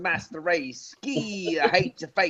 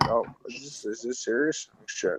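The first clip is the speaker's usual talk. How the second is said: calm, cool, unbothered, low and quiet; 7 semitones lower, 5 dB quieter than usual. Showing how DJ sounds in real life: imitating DJ's calm tone. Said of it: "that kinda tone".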